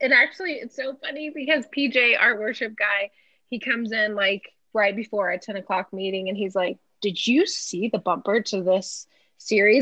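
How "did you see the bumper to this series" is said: mock spooked, uneasy, scared-sounding. Retelling a coworker's question about the series video: imitating PJ sounding scared. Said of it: "Like, like, scared".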